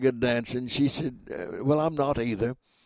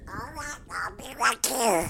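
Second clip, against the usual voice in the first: tiny, squeaky duck character voice, very high; 9 semitones higher, 4 dB quieter than usual. Recreating a radio bit with a duck at the microphone, in the little Webster duck voice. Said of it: "the little duck voice I do".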